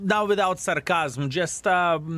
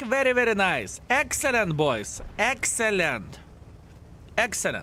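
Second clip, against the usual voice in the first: dry, sarcastic, fake-approving praise; 3 semitones higher than usual. Praising the team in the game after something goes badly: sarcastic praise. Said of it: "A bit of sarcasm check".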